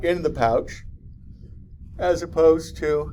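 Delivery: yawning while speaking. Lecturing a class on marsupials, speaking mid-sentence while yawning. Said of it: "I'm sorry, I'm yawning again".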